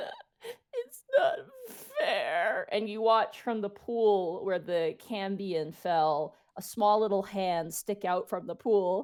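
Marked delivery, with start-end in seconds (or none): 0.0-2.7 very high, tearful, swooping crying whimper. Voicing a tiny creature crawling from a pool: whimpering and crying. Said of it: "whimpering, like, crying".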